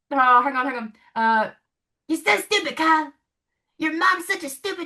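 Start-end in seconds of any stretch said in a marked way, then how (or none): 2.1-4.8 high-pitched cartoon character voice. Trying a requested impression for the other speaker: Eric Cartman voice. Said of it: "my Eric Cartman impression".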